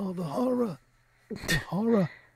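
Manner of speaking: each word drawn out slowly. Mocking how some guys sound, doing a Marlon Brando impression. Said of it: "trying to do a Apocalypse Marlon Brando impression".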